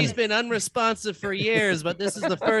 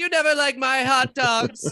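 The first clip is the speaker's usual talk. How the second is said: loud, angry screaming; 4 semitones higher, 3 dB louder than usual. Playing a wife in an improv scene, yelling at her husband: wife screaming. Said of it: "His wife is screaming at him".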